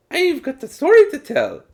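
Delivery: very high, swooping, bad mock Irish accent.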